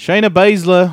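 put-on Australian accent. Reading a name from notes: Australian accent. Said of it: "I don't know why I said in an Australian accent".

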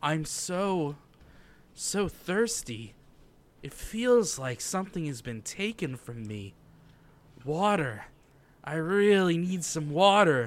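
put-on female character voice. Asked by a co-host to do her voice while recapping: female character's voice. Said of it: "You want to do her voice?".

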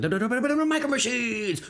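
extremely fast announcer. Recalling the guy in the commercials, doing the Micro Machines ad fast-talker. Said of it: "talks extremely fast through it".

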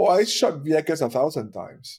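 mock casual, nonchalant, offhand throwaway delivery. Retelling what a Navy officer said in the hallway: imitating a nonchalant remark. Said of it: "he said in the most nonchalant way".

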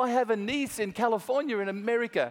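high-pitched broken-English phrasing. Retelling a chat with a woman abroad, quoting her in broken English accent. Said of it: "in her broken English".

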